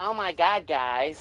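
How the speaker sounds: very slow, stretched-out, drawn-out, annoying delivery.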